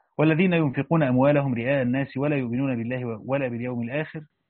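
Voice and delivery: plain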